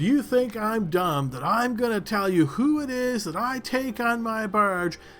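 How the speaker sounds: furious yell, high and angry. Describing a character who approaches you: retelling a loud shout. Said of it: "He's like shouting really loudly".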